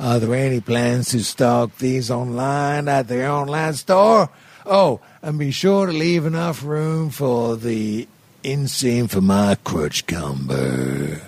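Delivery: put-on American accent. Reading out a listener's question in his voice, as asked: put-on American voice. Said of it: "but do it in his voice".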